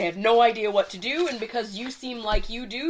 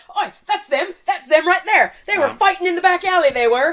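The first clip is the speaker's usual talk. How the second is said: frantic, excited, loud, rushed shouting; 8 semitones higher, 7 dB louder than usual. Narrator voices the cabbage man pointing out the fighters, frantic cabbage man. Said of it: "jumping up and down frantically the cabbage man going".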